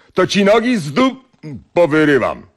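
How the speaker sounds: very high, swooping, yelled shout. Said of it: "zawołał".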